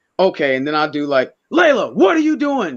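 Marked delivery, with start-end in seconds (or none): 1.5-2.8 yelling, pitched very high. Speaker acting out how a certain person would yell at her, imitating someone yelling. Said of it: "Yelling like how you know that person would yell at her".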